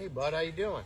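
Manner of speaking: low, soft fatherly voice, dropped low.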